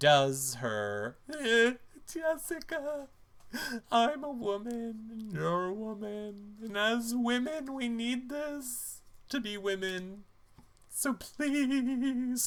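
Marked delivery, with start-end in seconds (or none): 1.4-12.5 very high, dry-eyed, tearless fake crying plea. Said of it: "I can't with your tearless crying".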